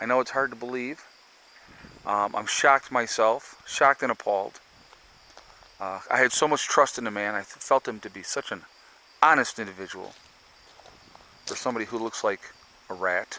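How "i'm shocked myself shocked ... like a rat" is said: ordinary talk, nothing marked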